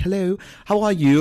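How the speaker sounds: high fake British accent. Describing going out in public in a put-on accent; british accent. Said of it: "I do my British accent".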